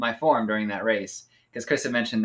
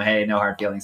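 usual speaking voice

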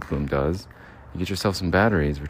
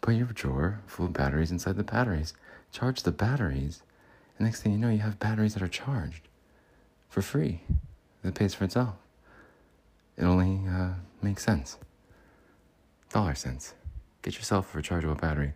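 put-on halting actor voice, quieter; 4 dB quieter than usual. Doing an impression, selling rechargeable batteries: Jeff Goldblum impression. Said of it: "Jeff Goldblum, everybody".

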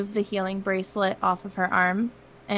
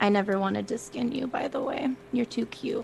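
soft, hushed whisper; 3 semitones higher, 6 dB quieter than usual. Narrating a scene, she hugs Halstead and speaks to him: whispering. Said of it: "she's just whispers".

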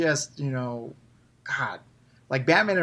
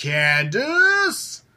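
acted playful comical scolding, name drawn out; 8 semitones higher, 4 dB louder than usual. Imitating how a character calls out a name: comical mock-scolding Candace. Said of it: "It's like this kind of comical, boy, are you in trouble?".

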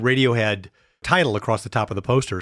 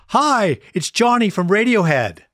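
cheerful, high sing-song, swooping up and down; 10 semitones higher, 4 dB louder than usual. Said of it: "a very cheerful voice got on the other line".

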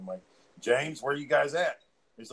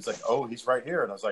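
normal talking voice

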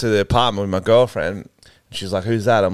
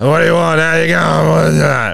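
intimidating put-on menace, loud, fast, rough; 6 semitones higher, 6 dB louder than usual. Retelling answering a late-night delivery at the door, in a put-on scary voice. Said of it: "I do a scary voice".

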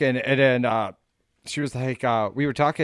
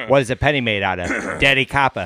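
fake old-style Boston accent; 5 dB louder than usual. Speaker tells a dad joke in a Kennedy accent. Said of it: "that's more of a Kennedy accent you got going on".

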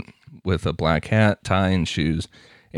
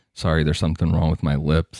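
put-on flat monotone voice. Speaker acts out an imagined guy saying this over and over, real monotone. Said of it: "imagine this guy like real monotone saying like".

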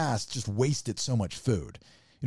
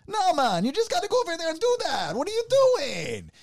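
put-on very high, swooping yell in a Caribbean accent. Describing how people yell at each other, imitating them yelling in a Caribbean accent.

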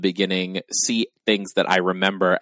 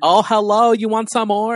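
very high, loud, pushy caricatured woman's voice; 6 dB louder than usual. Recounting a show scene, the store owner greets two shoppers: caricatured vietnamese nail lady voice. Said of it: "caricatured of a Vietnamese nail lady".

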